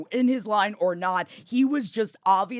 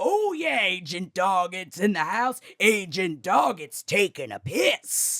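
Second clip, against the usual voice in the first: pumped, boastful, hyped-up, proclaiming delivery. Retelling what another guy said after Jeff: imitating the other guy. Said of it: "And then he went".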